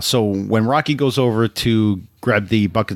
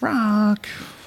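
put-on whiny voice, higher; 11 semitones higher than usual. Recalling Mickey's tone when stopping Rocky: whining Mickey impression. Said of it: "Mickey's kinda whining a little bit there".

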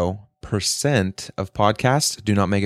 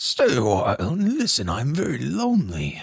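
put-on old storyteller voice, pitched higher; 4 semitones higher than usual. Answering a co-host's attempt with a Deckard Cain voice. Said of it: "Deckard Cain's hard to do".

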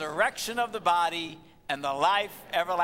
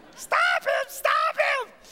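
put-on very high, shrill, sustained loud screaming; 5 dB louder than usual. Retelling how a resident kept shouting the whole time, retelling a resident screaming. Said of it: "He kept that up the entire time".

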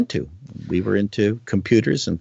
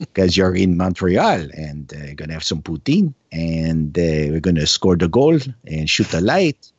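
put-on Quebec French accent, much faster; 4 semitones lower than usual. Joking about Canadian regions and showing off an accent, in a Quebec French accent. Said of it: "it's fun doing the Quebec kind of accent".

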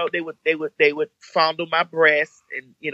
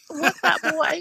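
very high, flirty chat-line voice; 12 semitones higher, 3 dB quieter than usual. Recalling going up to a cute guy, the speaker demonstrates a chat line voice. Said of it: "very chat line voice".

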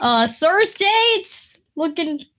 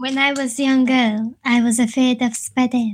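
put-on French-accented English; 3 semitones lower than usual. A speaker tries out a line for the group, in a french accent. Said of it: "That's a great French accent".

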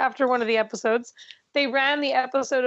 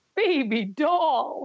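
broad, thick, laid-on put-on New York accent. Imitating a contestant's catchphrase: thick Fred Armisen fake New York accent. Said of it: "thick Fred Armisen fake New York accent".

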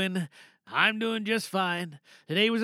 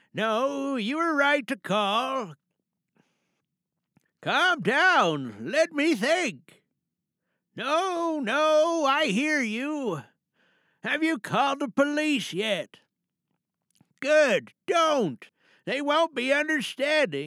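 pitched-up character voice, no drawn out; 6 semitones higher than usual. Performer mid-monologue, talking to a caller on the phone, Grampy character voice. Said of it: "so we're going to be doing Grampy this evening for tonight's monologue".

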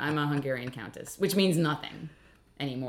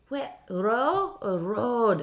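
put-on Scottish accent, higher pitch; 8 semitones higher than usual. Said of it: "I don't know why I made him Scottish".

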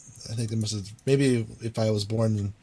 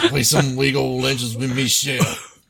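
loud put-on Louisiana-style accent; 3 semitones higher, 6 dB louder than usual. Friends riffing on a game's name, one says it like a Cajun guy: Cajun accent. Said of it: "Say it like a Cajun guy".

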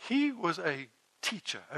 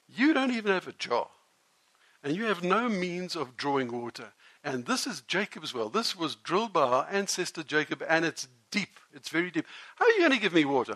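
ordinary talk

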